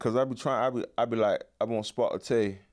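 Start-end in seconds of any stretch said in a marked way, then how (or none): 1.6-2.5 put-on British accent, lower. Showing how they try to speak with an English accent. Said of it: "speak with a English accent".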